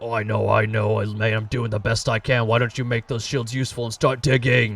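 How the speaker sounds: big booming giant voice, "know" stretched. Describing a game to friends, you act out the second giant answering, in a booming giant voice. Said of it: "you hear these massive booming voices".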